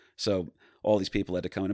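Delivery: plain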